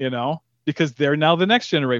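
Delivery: ordinary delivery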